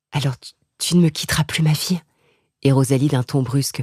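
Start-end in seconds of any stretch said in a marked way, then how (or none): 0.1-2.0 trembling voice quivering with feeling. Reading a novel aloud, an old woman asks her maid to stay: murmuring, trembling with emotion. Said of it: "tremblant d'émotion, murmura".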